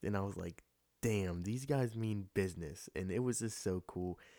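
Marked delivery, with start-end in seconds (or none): none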